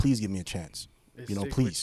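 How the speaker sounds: put-on pleading, begging tone. Retelling asking to get a property despite a felony: retelling his own begging.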